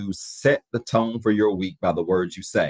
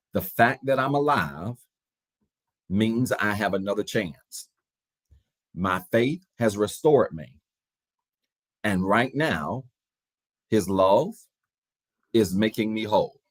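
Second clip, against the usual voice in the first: slow, deliberate delivery. Leading a declaration for listeners to repeat line by line, saying it slowly. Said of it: "I'll say it slow".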